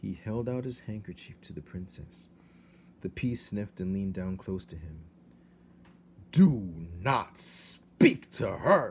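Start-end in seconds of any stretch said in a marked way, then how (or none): 6.3-8.9 very loud, drawn-out, slow booming thundering voice. The king to Despereaux, a mouse who spoke to the princess, thundering. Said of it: "thundered the king".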